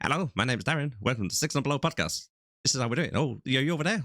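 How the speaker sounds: rushed voice like a sped-up, fast-forwarded clip. Showing how a sped-up film clip sounds: imitating sped-up voice. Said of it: "They'll speed it up and it goes".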